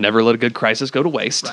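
plain

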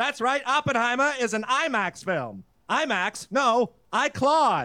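put-on slow, old-timey forties newsreel announcer voice. Performing a written bit as a 1940s newsreel man: Claude Humphreys old-timey newsreel voice. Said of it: "Jason wrote something for the old-timey news person today".

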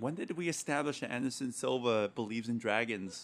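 ordinary talk

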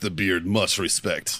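put-on thick, heavy Russian accent, low-pitched, laid on thick. Retelling what a man said on first meeting the speaker, thick Russian accent. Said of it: "with this thick russian accent he walks in".

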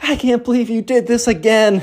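high-pitched scolding scream. Retelling a story, acting out a mother dragging her son out, imitating her screaming. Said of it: "screaming at him like".

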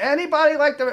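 high, loud, pleading mock scream.

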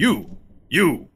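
shouting. Calling to a character forty feet away, in character: yelling at someone. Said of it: "Are you just yelling at her".

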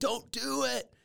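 mock yell, pitched way up, high-pitched. Describing a time travel scene, imitating a character yelling at his past self. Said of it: "he's like yelling".

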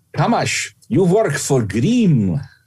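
put-on Hungarian accent. Remembering what a former teacher used to tell him, imitating a Hungarian accent. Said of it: "in her Hungarian accent".

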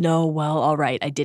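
ordinary delivery

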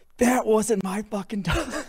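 mock shrill, very high-pitched, loud screamed outburst. Retelling a story about a dog mess, re-enacting how he screamed out. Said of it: "immediately screams out".

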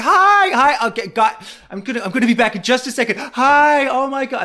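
play-acted hyper, excited chatter, high and loud. Imitating a woman running up to tables greeting people: imitating Siggy, hyper and excited. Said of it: "running up to tables like".

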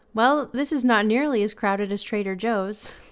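usual speaking voice

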